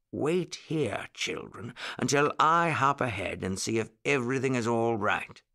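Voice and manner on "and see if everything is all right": ordinary delivery, nothing marked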